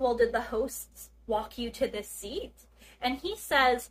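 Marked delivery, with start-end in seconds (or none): none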